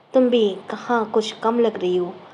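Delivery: ordinary delivery, nothing marked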